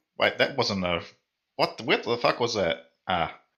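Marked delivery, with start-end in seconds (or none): none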